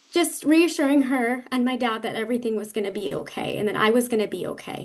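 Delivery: slightly moved, a little emotional tone. Guest recounting a family story during an interview: a little emotional. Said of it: "a little emotional".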